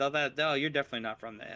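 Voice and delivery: ordinary talk, nothing marked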